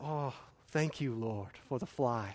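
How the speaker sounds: put-on hushed, very soft, meek, humble Chinese accent. Speaker retells a late teacher's prayer, imitating his meek Chinese accent. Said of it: "in his very meek and humble Chinese accent".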